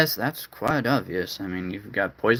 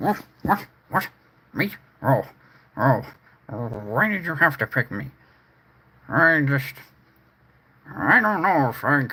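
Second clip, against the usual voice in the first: put-on pig character voice; 4 semitones higher than usual. Asked if the pigs have anything to say, one pig answers, in a pig character voice. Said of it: "Anything you pigs want to say this time?".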